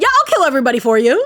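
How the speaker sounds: mock nonchalant delivery. Retelling a character's offer to her, imitating a nonchalant tone. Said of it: "He just said that like so nonchalantly".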